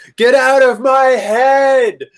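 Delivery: very high, piercing, drawn-out, full-force scream. Hearing a voice in her head, the character screams back at it. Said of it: "I think I just screamed this out loud".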